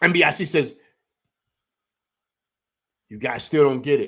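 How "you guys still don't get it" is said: normal talking voice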